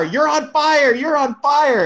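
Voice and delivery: very high-pitched shouted yell. Retelling yelling at someone in a car on fire: retelling own yell. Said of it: "I remember yelling at you in the car".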